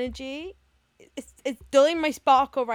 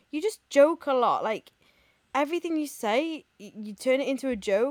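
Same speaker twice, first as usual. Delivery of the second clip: ordinary talk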